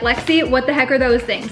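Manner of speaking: plain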